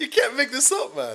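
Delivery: talking through laughter. Reacting to a match, can't stop laughing: laughing while talking. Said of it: "I can't stop laughing at this shit".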